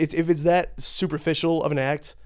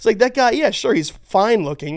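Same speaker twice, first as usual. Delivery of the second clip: plain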